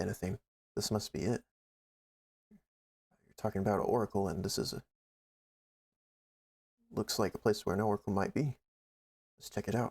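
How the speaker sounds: hushed, voiceless half-whisper throughout. Playing a character who has found a possible oracle site: half-whispering. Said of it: "I whisper".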